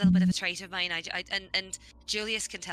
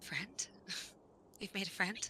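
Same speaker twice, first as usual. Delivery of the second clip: hushed, acted whisper under the breath; 13 dB quieter than usual. Voicing a character who whispers to Julius: whispering under breath in character. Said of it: "Like whispering, whisper under my breath".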